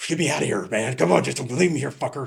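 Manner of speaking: put-on angry, pissed-off tone. Retelling a stalled driver's complaint while shaking: imitating someone pissed off. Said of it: "pissed off".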